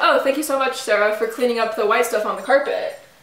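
ordinary talk, nothing marked

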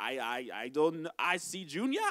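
put-on Jamaican accent. Retelling a quoted exchange, speaker voices the reply in a Jamaican accent. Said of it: "I'm going to do in the Jamaican accent of the quote".

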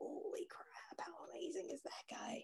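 very soft, hushed, awed whisper. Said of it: "I was just like".

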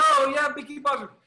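delighted, high reply. Chatting about old cartoons while waiting, [name] answers the question, imitating someone so happy. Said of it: "He was so happy".

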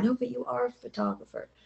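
soft, quiet aside.

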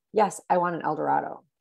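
put-on arrogant tone. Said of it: "very arrogantly".

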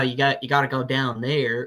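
fake American accent, go-to put-on. Speaker shows their usual impression of Americans: go-to American accent. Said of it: "that's my go-to American is like".

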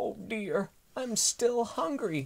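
tiny little dinosaur voice, very high, sighing. Narrator reads the hungry dinosaur's sighed line in a tiny little dinosaur voice. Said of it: "sighed in a tiny little dinosaur voice".

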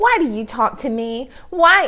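acted mock-sarcastic delivery. Retelling a story, voicing the Samaritan woman, acting out a sarcastic retort. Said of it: "she sarcastically says to him".

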